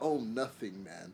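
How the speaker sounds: put-on British accent. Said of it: "I love that accent".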